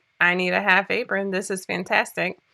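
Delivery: ordinary delivery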